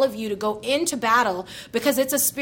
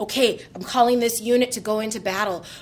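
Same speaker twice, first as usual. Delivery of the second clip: ordinary talk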